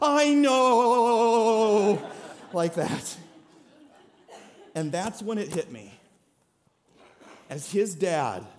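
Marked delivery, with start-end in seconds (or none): 0.0-2.0 imitated, shivering, shaky voice. A father retelling his son's trusting reply, imitating his son's shivering voice. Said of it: "in this like shivering voice he goes".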